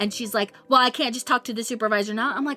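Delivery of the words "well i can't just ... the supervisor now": imitated snippy voice. Retelling a woman's reply while venting about work: imitating someone being snippy. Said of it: "she started getting snippy with me".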